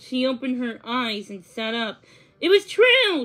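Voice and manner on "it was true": high, sudden exclamation of realization. Narrator reads a character's line as she wakes and sits up, exclaiming. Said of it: "she exclaimed".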